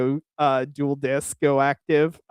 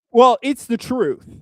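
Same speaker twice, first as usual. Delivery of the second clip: high, raised, casual, offhand throwaway tone; 8 semitones higher, 5 dB louder than usual. Mimicking how the other speaker casually tossed off a claim: imitating the other speaker. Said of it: "I love how he just throws that, like".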